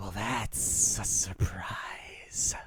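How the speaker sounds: very slow, breathy whisper, every word stretched. Voicing Dendar greeting a player in a dark space: voicing Dendar. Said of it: "willing yourself to meet with, meet with Dendar".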